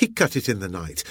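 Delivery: ordinary delivery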